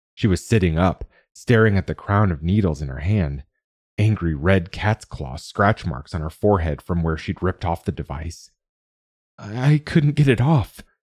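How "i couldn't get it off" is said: high, strained, effortful croaking voice. Sitting up in her pod after ripping off the device, a woman speaks, croaking. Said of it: "she croaked".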